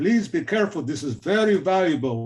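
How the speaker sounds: put-on heavy Dutch accent, laid on thick. Speaker quotes the keeper of the prints warning him, in a thick Dutch accent. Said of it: "with a thick Dutch, Dutch accent".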